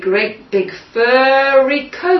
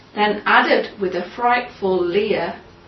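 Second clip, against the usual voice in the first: plain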